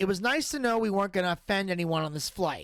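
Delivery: ordinary delivery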